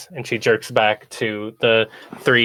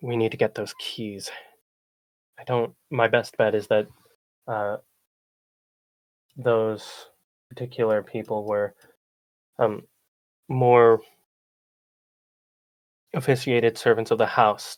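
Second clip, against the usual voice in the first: muttered under breath as quietly as possible; 3 dB quieter than usual. A player speaking in character mutters under the breath while walking. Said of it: "muttering under my breath as quietly as possible".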